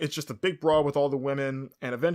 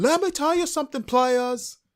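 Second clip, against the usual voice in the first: loud, high, belted put-on British accent; 12 semitones higher, 5 dB louder than usual. Imagining Paige coming out during the break, Paige impression, British accent. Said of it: "That's my British accent".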